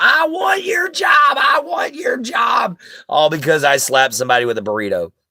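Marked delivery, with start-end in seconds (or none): 0.0-2.8 put-on, very high, shrill scream at full volume, drawn out. Retelling how a customer screamed at the store: imitating someone screaming. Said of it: "She starts screaming at the top of her lungs".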